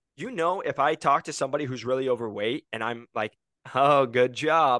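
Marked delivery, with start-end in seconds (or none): 3.7-4.8 mocking, sarcastic, louder and much slower. The speaker demonstrates talking to a client, sarcastic. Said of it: "they know I'm being sarcastic".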